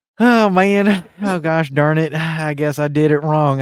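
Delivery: fake Southern accent, loud, slow and drawn out. Joking after a remark about embracing American culture: put-on Southern accent. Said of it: "I shouldn't embrace this Southern accent".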